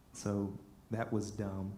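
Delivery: plain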